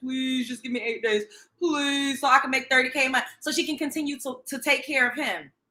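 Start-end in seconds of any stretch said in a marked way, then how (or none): 0.0-3.2 put-on tearful pleading tone. Retelling a woman's plea for eight days: imitating someone pleading. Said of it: "She's pleading. She's crying out".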